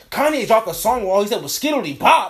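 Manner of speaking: blurted out way too loud, high. Retelling someone on their phone in a room meant to be silent, mad loud. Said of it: "mad loud".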